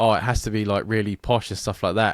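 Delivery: plain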